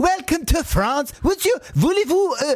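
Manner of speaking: put-on French accent. Reminded they can do french, the speaker tries out a mock french accent.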